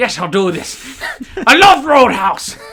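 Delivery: put-on booming, very high, slow, drawn-out Irish accent. Imitating a fighter accepting a movie role: Conor McGregor Irish accent. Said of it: "but in an Irish accent".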